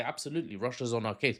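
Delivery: ordinary delivery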